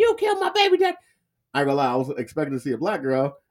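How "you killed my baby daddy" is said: high-pitched female scream. Retelling a video where a woman screams at a cop: imitating a woman screaming. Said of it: "you hear this lady screaming".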